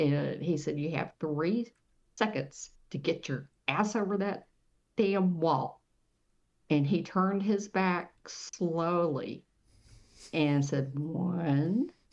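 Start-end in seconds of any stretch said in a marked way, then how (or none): none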